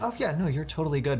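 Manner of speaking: put-on unassuming easygoing voice, high and quick.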